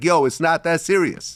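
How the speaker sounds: usual speaking voice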